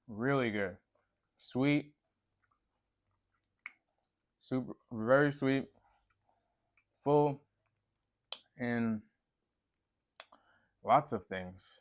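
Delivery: talking while chewing, mouth full. Speaker tasting a dark grape, talking while chewing. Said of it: "Excuse me for chewing".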